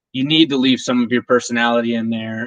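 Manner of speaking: usual speaking voice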